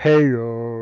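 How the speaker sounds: loud broadcast show-intro announcer voice. Imitating how Jason opens his periscopes: imitating Jason's intro greeting. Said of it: "I was doing the Jason, ... the way, you know, he does his beginning".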